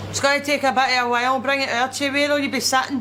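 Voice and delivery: put-on speaking with a Scottish accent. Taking a food order at a counter and asking where the customer will sit: Scottish accent. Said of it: "slagging of the Scottish accent".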